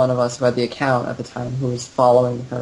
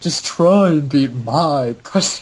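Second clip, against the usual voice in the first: slow, cracking up, laughing through the words. Quoting their own old script line, laughing while speaking. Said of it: "I can't even say it without cracking up".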